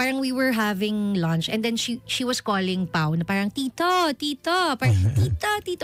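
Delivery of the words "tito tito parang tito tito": put-on toddler baby voice, much higher pitch. Retelling how a two-and-a-half-year-old girl called [name] at lunch, baby voice. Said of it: "parang si baby voice pa".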